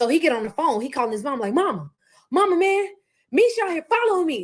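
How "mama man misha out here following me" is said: acted frightened voice, high, slow, scared and pleading. Retelling a man calling his mother while being followed, imitating him sounding scared. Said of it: "he sounded scared".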